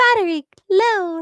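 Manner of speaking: put-on tiny, very high-pitched British accent. Imitating the device voice in her ear, in its little British voice. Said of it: "with her little British voice in my ear".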